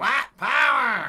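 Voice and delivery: very high, very loud squeal like a dying hog. Quoting a skit line, asked why it sounds like a dying hog. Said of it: "why do you sound like a, uh, dying hog".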